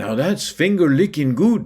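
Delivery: put-on Spanish accent. Quoting a friend's saying, imitating Paco Platillero's Spanish accent. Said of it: "as our friend Paco Platillero used to say in his Spanish accent".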